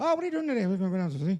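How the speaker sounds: put-on high-pitched Irish accent. Imitating the man his Irish accent is based on: put-on Irish accent. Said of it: "like my Irish accent".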